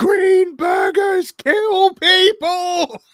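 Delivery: mock very high, very slow, drawn-out shouting. Retelling a scene from Kitchen Nightmares, imitating Gordon Ramsay yelling. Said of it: "he was literally yelling".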